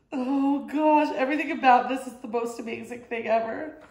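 tearful, choking-up voice, on the verge of tears. Reacting to Golden Girls prints, on the verge of tears. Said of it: "I'm gonna cry".

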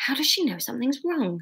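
soft, muttered aside under the breath. Narrator reads Sarah muttering to her mother. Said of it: "Sarah muttered to her mother".

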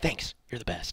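whispering. Speaking aside during a game stream, whispering.

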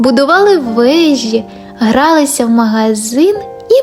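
ordinary delivery

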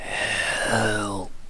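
soft, raspy creature voice. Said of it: "just says the same".

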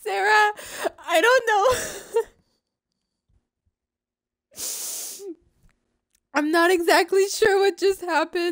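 laughing so hard it turns to crying. Streaming a game, the player talks to Sarah, crying with laughter. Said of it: "but I'm crying".

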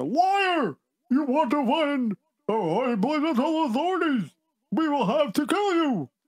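very high-pitched, slow, drawn-out yell. Narrator voices a bandit accusing a rabbi lost in the forest, shouting. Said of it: "one of the bandits shouted".

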